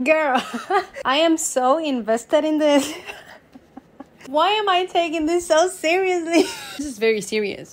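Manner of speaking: laughing while talking.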